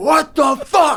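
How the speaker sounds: put-on angry yelling. Retelling how a neighbor came out of his house: imitating a man yelling. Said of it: "He's, like, yelling at this".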